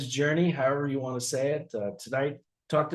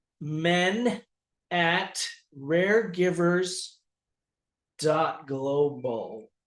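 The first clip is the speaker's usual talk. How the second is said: very slow, carefully spelled-out, clear enunciation; 3 semitones higher than usual. Repeating an email address when asked to say it again: slow and clear. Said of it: "Say it again slowly and clearly".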